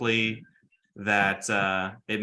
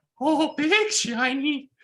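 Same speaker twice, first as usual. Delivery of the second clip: very high, tiny little critter voice; 4 dB louder than usual. Voicing the Boggles as they first see the dragon: Boggle voice. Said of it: "the Boggles will be like".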